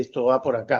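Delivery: plain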